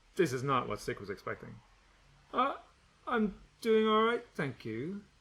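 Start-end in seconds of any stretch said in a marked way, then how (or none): 2.3-5.0 soft, quiet, slightly high. Narrator reading, Stick answering Gretchen's greeting: quiet voice. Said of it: "he says in a quiet voice".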